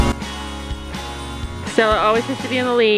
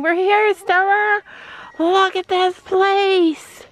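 put-on horse scream, much higher pitch; 9 semitones higher than usual. Watching the horses arrive, the speaker voices Sophie, mock-screaming as Sophie. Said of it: "She's screaming".

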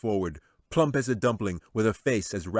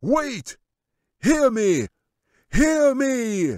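shrill, very high, slow, drawn-out shout; 7 dB louder than usual. Amid the uproar, the wizard raises his hands to the creatures: shouting. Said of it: "he shouted".

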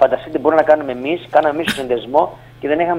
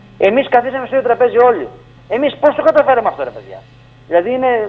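raised, pitched-up, impassioned shouting; 8 semitones higher than usual. Telling how farmers of rival parties sat at one table, shouting. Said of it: "τώρα συγγνώμη που φωνάζω".

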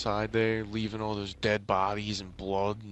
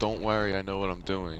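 ordinary delivery

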